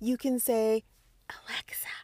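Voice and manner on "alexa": very quiet, barely audible whisper. Telling listeners how to ask a smart speaker for the show: whispering. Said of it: "I'm trying to whisper".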